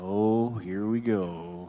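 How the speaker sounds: mopey donkey character voice.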